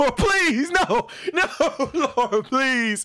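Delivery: frantic, panicked, very high-pitched begging. Retelling being caught with lipstick on, the speaker acts out a panicked plea. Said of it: "I'm panicking".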